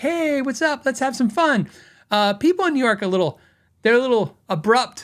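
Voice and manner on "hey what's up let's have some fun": easygoing, cheerful, upbeat Western tone, pitched up. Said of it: "I'm a Western person, so apparently, like, you can tell".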